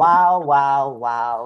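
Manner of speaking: three loud wows called out. Doing a quick impression for the others: Casey Rose Wilson impression. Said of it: "That's my Casey Rose Wilson".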